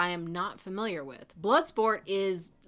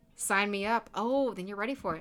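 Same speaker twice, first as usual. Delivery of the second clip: ordinary talk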